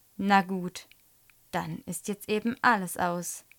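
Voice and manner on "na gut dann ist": ordinary delivery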